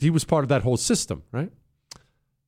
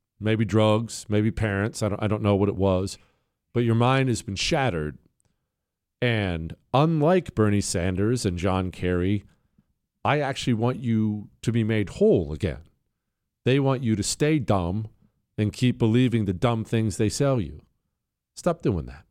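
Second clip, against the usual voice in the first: fake gentle, soothing loving voice. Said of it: "that's my loving voice right there".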